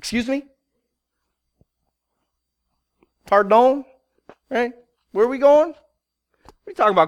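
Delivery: bewildered, caught off guard, rapid-fire delivery. Retelling God's call to Moses, voicing Moses: voicing Moses. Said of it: "And Moses is like".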